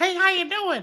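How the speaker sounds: very high, squeaky, puppet-like little voice. Showing how he'd holler at someone at Walmart on a first date, high-pitched put-on voice. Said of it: "that sound more along with Elmo. How you just hit that high pitch?".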